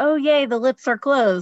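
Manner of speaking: sarcastic mock cheer.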